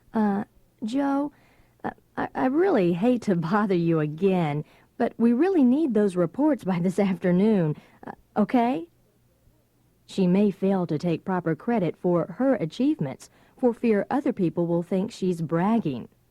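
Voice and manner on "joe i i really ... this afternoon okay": placating, hesitant, apologetic tone. A woman asks a man for something she needs, apologetic, conciliatory tone. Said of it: "She may use an apologetic or conciliatory tone of voice".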